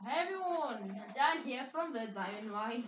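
put-on British accent held throughout. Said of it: "just do a British accent".

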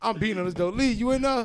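loud, high-pitched call.

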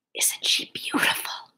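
soft, hushed, close whisper. The thread master leans close to another mouse's ear and asks, whispered. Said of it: "The thread master whispered".

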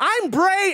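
put-on high, cheery kids-host voice.

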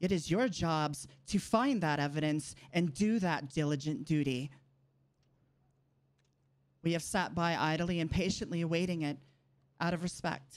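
frustrated, rising in anger. Telling those whose job is to find the evidence: angry raised voice. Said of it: "I apologize for raising my voice".

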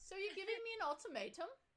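bad English accent. Retelling a woman's reply to an ultimatum, in a bad english accent. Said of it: "I can't do an English accent".

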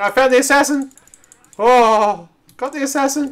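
very high, very loud panicked cry. Calling out to the others on finding the assassin: panicked. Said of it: "the panic in your voice is brilliant".

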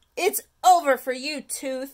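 openly defiant, declaring tone. A boy lifts a carrot above his head and addresses the tooth, announcing defiantly. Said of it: "announced Stuart defiantly".

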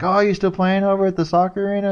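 very high, beaming, all-smiles friendly cheeriness. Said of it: "he was all smile".

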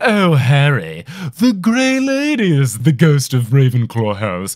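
grandly pompous, very proper, lofty delivery. Describing an audiobook of a Harry Potter chapter: Stephen Fry's pompous Nick voice. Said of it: "It's the most pompous thing ever".

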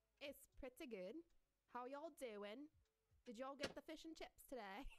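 amateur, put-on British accent. Speaker tries out an accent for everyone listening, in a put-on British accent. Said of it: "This is my British accent".

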